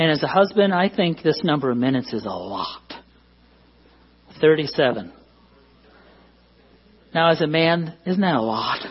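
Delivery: dry sarcasm, acting impressed. Telling the audience a study's answer on husband-wife talk time: sarcastic. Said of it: "I'm being sarcastic".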